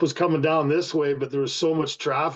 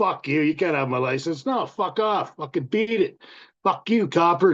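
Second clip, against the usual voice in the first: acted brash, mouthy, cocky, defiant taunting tone. Retelling telling off a railway cop: retelling own cocky words. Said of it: "Just being a cocky little fuck".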